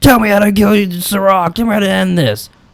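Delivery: play-acted very high yell. Retelling a scene where Caleb demands answers: imitating Caleb yelling. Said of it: "So when Caleb yelled that".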